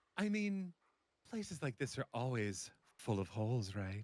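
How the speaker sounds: soft, sultry, seductive, sexy voice. Voicing a character's line after picking it, in a sexy voice. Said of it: "Sexy was a good choice".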